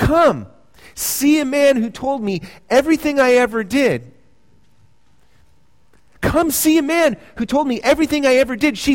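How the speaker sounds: eager, urgent, joyful, high-pitched calling out. Retelling the woman running into the village, telling anyone who will listen: retelling an urgent, joyful call. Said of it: "There's an urgency in her voice, but there's also a joy".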